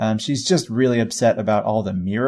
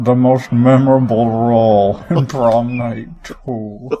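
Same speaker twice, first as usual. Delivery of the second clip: put-on odd old man voice, louder; 5 dB louder than usual. Joking about an actor's film role: Plinkett voice. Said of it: "I like your impression of that, that guy".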